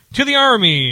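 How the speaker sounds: mock shouting. Recounting toasts at a dinner, acting out someone across the room: retelling someone's yell. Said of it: "someone across the room yells".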